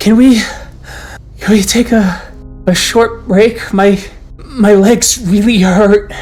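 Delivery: timid, high, mouse-like little peep. One of the kinfolk, afraid of their relatives, asks for a short break, in a mouse-ish peeping voice. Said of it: "peeps up with an almost mouse mouse-ish voice".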